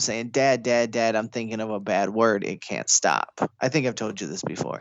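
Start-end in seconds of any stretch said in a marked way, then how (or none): 0.3-3.4 weepy, tearful, crying, begging tone. Retelling running up to dad at a barbecue as a child: imitating own childhood crying. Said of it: "and I'm crying".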